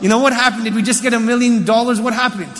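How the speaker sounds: ordinary talk, nothing marked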